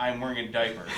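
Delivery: ordinary delivery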